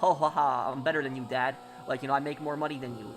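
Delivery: ordinary delivery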